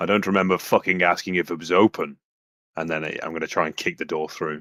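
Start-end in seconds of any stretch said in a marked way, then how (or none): 0.0-2.2 very loud hollered shouting. A player describing their character's move answers back through the door, shouting in character. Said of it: "I'll just shout back".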